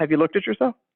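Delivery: put-on flat, deadpan, expressionless voice. Retelling a comedy skit's psychologist answering a patient: imitating Nora Dunn's deadpan doctor. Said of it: "this same deadpan look on her face, totally no emotion".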